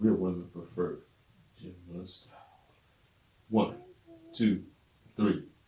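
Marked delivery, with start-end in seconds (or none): 0.0-2.3 sultry, super sexy, seductive delivery. Showing two speakers how to say a line: super sexy. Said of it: "super sexy".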